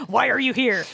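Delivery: mock incriminating, accusing interrogator tone. Showing how a question to a guest could sound: mock incriminating interrogation tone. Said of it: "Like this incriminating".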